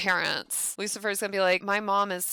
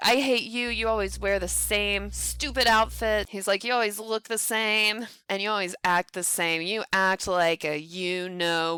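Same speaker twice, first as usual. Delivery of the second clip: usual speaking voice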